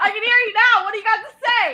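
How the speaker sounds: shrill, high, very loud angry shouting. Retelling a confrontation in a McDonald's parking lot from a minivan, retelling a yell. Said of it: "Yelling over me".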